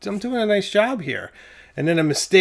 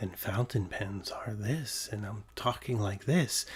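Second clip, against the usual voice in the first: very low, very quiet, soft, calm, soothing; 8 semitones lower, 14 dB quieter than usual. Describing a recording's vocal, demonstrating the voice used, soft and calm. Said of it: "trying to do my soft voice where I'm like".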